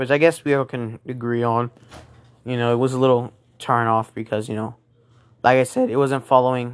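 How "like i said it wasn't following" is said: cracking, breaking voice. Speaker discussing the Taskmaster storyline, voice cracking. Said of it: "my voice cracked".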